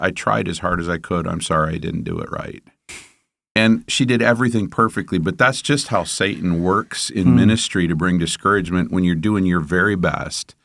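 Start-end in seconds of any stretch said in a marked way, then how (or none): 0.0-2.6 mock-tearful, put-on tearful voice. Recounting a woman's words after her car stalled, the speaker imitates someone tearful. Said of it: "she looked up at me with tears in her eyes".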